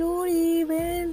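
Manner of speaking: high-pitched, happy, calling out.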